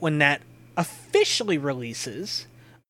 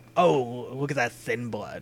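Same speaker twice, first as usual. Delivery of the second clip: mock-condescending tone, lower and quieter; 4 semitones lower, 3 dB quieter than usual. Acting out a remark they found condescending, mock-condescending.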